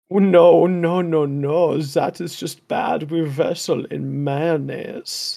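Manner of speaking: put-on speaking with a German accent. Speaker improvising a Christmas world welcome bit; German accent. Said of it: "I'm going to talk in the German accent".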